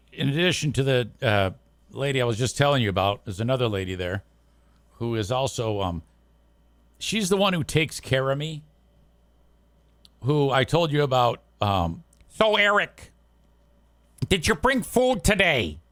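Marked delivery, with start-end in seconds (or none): 12.4-15.7 put-on Northern Michigan Canadian-sounding accent, pitched up. Retelling what a coworker asked: imitating a Northern Michigan Canadian accent. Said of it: "She got that Northern Michigan Canadian accent thing going".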